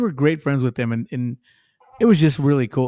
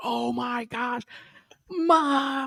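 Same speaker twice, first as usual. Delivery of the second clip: mock starstruck, very high, slow scream, "mom" stretched; 10 semitones higher, 6 dB quieter than usual. Retelling a fan calling to his mom: imitating someone screaming. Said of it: "He's screaming".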